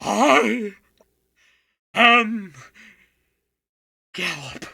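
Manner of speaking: very loud, booming, odd beast-like voice. Narrator voicing a strange voice from the back of a dark stable: odd animal-like voice. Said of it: "an odd voice that almost sounds like it's coming from an animal".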